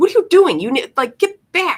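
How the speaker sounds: very high, scolding motherly yell. Retelling how a friend yelled at her kid running to the fridge: imitating a mom yelling. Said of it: "she yells at him again".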